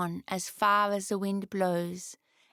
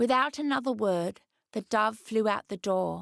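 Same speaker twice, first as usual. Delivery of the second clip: ordinary delivery, nothing marked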